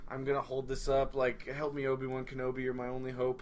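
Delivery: ordinary delivery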